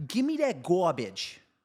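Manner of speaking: put-on Long Island accent. Telling others how your daughter talks to you, her dad, imitating your daughter's Long Island accent. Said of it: "my daughter talks with a Long Island accent".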